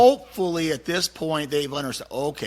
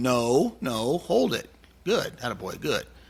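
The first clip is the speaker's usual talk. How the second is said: steady, calm, even-keeled, unexcited tone; 3 semitones lower than usual. Demonstrating how to talk to a dog on the table, even-keeled and calm. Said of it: "you try to stay even keel as possible".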